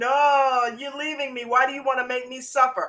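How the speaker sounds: weepy, crying pleading voice with drawn-out "no". Retelling how a mother started crying in the kitchen: imitating Julio's mom crying. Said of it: "Started crying in the kitchen".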